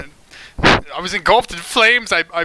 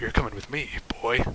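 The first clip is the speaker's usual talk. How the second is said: very hushed, very quiet, grim tone; 7 semitones lower, 12 dB quieter than usual. Voicing a tall man who grabs a player's shoulder: grim voice. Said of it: "just says grimly".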